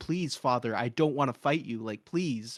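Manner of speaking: put-on tearful pleading tone. Describing a show scene, quoting Zuko begging his father, imitating Zuko crying. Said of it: "literally crying, like on his hands and knees".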